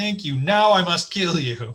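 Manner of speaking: slow, drawn-out cat character voice. Retelling petting cats and what they seem to say: voicing a cat. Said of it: "they're like".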